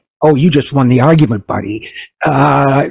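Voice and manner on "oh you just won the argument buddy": plain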